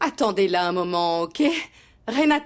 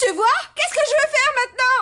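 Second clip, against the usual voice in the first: frantic, worked-up, very high-pitched panic; 4 dB louder than usual. In a drama, a character whose collection dress is torn as the journalist arrives: agitated. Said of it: "Mais calme-toi, s'il te plaît!".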